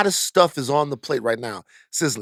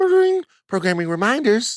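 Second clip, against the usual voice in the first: fake telephone voice, higher and louder; 11 semitones higher, 5 dB louder than usual. Announcing programming reminders as if answering a phone: put-on phone-answering voice. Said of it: "like I'm answering the phone somewhere".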